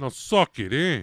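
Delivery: put-on Jersey accent. Riffing on someone's typical Philly Italian name, in a Jersey accent. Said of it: "I hear your accents coming out".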